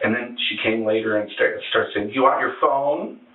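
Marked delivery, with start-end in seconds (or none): 2.1-3.1 mock, dripping, pointed, heavy sarcasm. Retelling what she said after screaming through the door, mock-sarcastic offer. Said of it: "really sarcastic".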